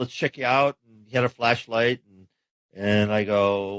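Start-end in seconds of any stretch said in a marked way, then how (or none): none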